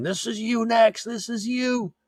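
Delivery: shrill, very high, shrieking scream. Recapping an episode where a senator gets hauled off: retelling a scream. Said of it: "he's screaming".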